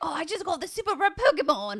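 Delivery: put-on very high, botched raspy voice, odd accent. Complaining that Ash always releases his Pokemon, speaker does a failed raspy Ash impression. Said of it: "I was trying to do like the raspy voice".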